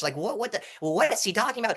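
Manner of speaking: high, baffled, disbelieving, incredulous tone. Showing how a higher pitch sounds incredulous: incredulous. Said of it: "go higher in pitch to sound more incredulous".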